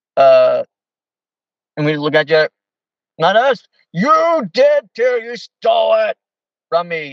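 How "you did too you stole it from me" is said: put-on, very high, angry man's voice. Retelling a man who turned mean toward two people, imitating an angry man. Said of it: "this guy was getting really angry".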